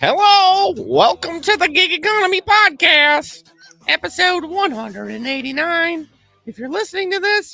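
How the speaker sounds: silly put-on voice. Opening a podcast episode for listeners: talking like an idiot. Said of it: "why I'm talking like an idiot".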